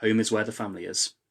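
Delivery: ordinary delivery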